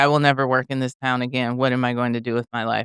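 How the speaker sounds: usual speaking voice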